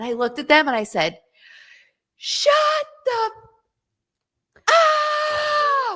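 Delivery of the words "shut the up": mock, shrill, all-out yell, very high, stretched upward. Retelling what they shouted back at people in front of hundreds; retelling a loud shout. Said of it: "as loud as I could".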